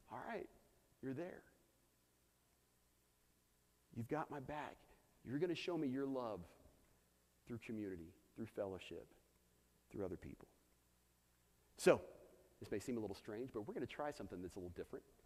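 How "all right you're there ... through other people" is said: acted weepy voice, words coming through crying. Retelling own words after a brother's early morning phone call: retelling own past crying. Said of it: "sitting there crying".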